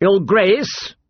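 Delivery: sharp, edgy. He corrects the girl who called him my lord: said sharply. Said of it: "he said sharply".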